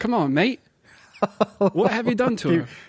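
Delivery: amateur put-on Australian accent. Reading a police story aloud, urged by the co-host to try again: attempted australian accent. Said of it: "I don't have an Australian accent".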